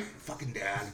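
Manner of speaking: very quiet, low, hushed and muttered dog voice. Man recalls speaking for his dog, cussing at him: dog's voice. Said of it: "So I'll be its voice".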